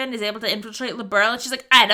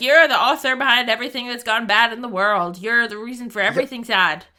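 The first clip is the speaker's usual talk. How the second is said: ordinary delivery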